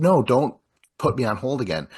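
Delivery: mock fed-up, frustrated protesting tone. Retelling a character on the phone: imitating a frustrated caller. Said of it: "And she's frustrated".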